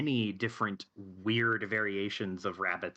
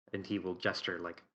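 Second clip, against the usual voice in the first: ordinary talk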